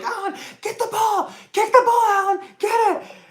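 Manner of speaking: very high, shrill screaming. Recalling a soccer game, the speaker re-enacts screaming at alan. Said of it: "I found myself screaming at Alan".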